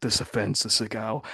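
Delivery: put-on, threatening, menacing whisper. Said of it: "talks about himself in the third person".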